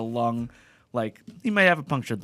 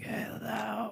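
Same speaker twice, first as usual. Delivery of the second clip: put-on very soft, pitched-up, voice-gone eighty-year-old voice; 8 semitones higher, 13 dB quieter than usual. Retelling how a coworker with a lost voice sounds: imitating a lost, old-sounding voice. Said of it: "he sounds like he's eighty now".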